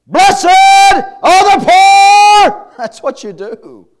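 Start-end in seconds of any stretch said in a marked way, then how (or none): 0.1-2.7 very loud, very slow, very high, booming, projected, drawn out. Acting out how he addressed crowds of thousands at a time, raised voice. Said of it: "You lift up your voice".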